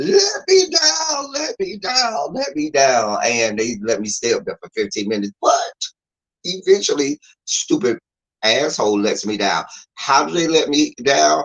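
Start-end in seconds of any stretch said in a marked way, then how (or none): 0.0-3.2 mock very high, swooping, stretched, drawn-out yell. Retelling being stuck in the air on a seesaw: imitating own scream. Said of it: "screaming at them".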